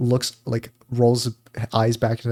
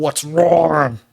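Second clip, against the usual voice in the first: put-on demonic woman voice, higher and louder; 4 semitones higher, 6 dB louder than usual. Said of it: "the Meat Canyon voice of whatever Meat Canyon's voicing a woman".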